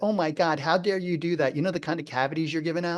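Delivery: ordinary talk, nothing marked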